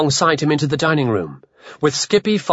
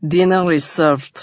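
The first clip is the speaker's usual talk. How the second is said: deadpan, flat, lifeless vampire-like monotone drone. Reading a story aloud, a character announces something from a doorway: vampiric monotone. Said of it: "in a vampiric monotone".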